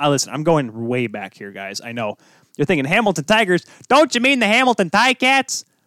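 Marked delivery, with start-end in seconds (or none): 2.8-5.6 put-on Chicago accent, pitched way up high. Speaker voicing what listeners might be thinking, in a Bill Swerski Chicago accent. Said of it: "took on the Bill Schwerski Chicago accent there".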